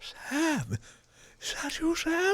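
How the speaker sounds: very high, amazed recognition. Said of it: "It's just".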